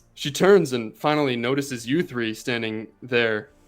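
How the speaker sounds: ordinary talk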